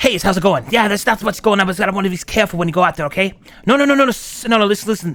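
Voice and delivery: put-on voice with a hiss. Trying out a voice and wanting to add a hiss, voice with a hiss. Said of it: "I want to add like a hiss though".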